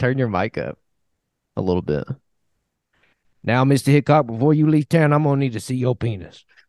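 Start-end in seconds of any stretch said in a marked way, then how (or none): 3.4-6.4 put-on character voice with New Orleans accent. Acting out a Deadwood scene addressing Mister Hickok: imitating Charlie Utter. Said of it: "they give him, like, a New Orleans accent?".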